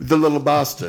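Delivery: put-on English accent on the phrase. Naming what he was known as in the trade, English accent. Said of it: "I like saying that with an English accent".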